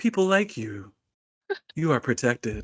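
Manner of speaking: low, soft, quiet, soothing ASMR-style voice. Casting calm emotions on another player, the speaker uses a low, soft ASMR voice. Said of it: "you hear my voice just get low and soft".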